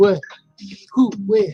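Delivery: put-on vampire voice. Acting out a vampire who comes in: John Travolta vampire voice. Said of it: "that's John Travolta vampire".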